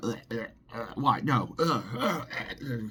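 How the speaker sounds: mock full-on tantrum of drawn-out protesting ughs. Retelling how he reacted after being told no, imitating someone having a fit. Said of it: "he was all having a fit".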